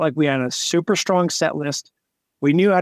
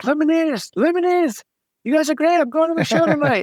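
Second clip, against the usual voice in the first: mock very high, rushed, super pumped gushing; 13 semitones higher than usual. Retelling how a fan greeted the band on the flight: imitating a super pumped fan. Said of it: "super pumped".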